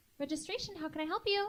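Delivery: bubbly, super peppy put-on sweet voice, very high. Pretending to answer the phone for registration, in a super peppy, sweet voice. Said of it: "I literally sound like this super peppy, sweet human".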